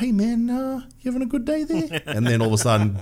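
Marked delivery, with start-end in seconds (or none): 0.0-2.0 put-on sweet old voice, pitched very high. Explaining why a movie character's voice works so well, doing a sweet old Korg voice. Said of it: "this sweet old".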